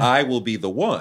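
ordinary talk, nothing marked

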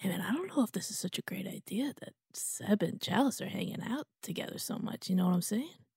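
hushed, close whisper. Whispering a warning into another character's ear: whispering. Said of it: "I'm whispering in your ear".

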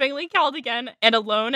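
ordinary talk

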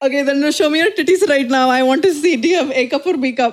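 imitated Indian accent. Asked to show the accent, the speaker mimics a guy on Omegle, imitating Indian accent. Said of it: "Like the guy on Omegle?".

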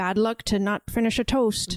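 put-on old sailor voice. Retelling a film scene about finishing a toast: Willem Dafoe impression. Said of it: "And that's my Willem Dafoe".

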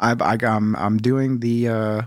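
ordinary talk, nothing marked

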